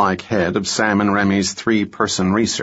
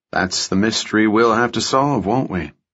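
ordinary delivery, nothing marked

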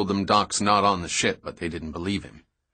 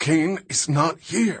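winded wheezing, much higher pitch; 8 semitones higher than usual. Narrator reads the captain's reply after a blow to the solar plexus, wheezing. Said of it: "he wheezed".

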